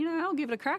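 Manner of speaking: playful voice. Retelling a joking offer to coach the men's team: retelling a joking remark. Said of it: "I very much jokingly went".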